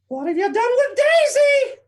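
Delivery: very high pitch, loud and swooping. Acting out a cartoon interrogation scene for kids: Mickey Mouse voice. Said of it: "Mickey Mouse waterboarding Donald Duck".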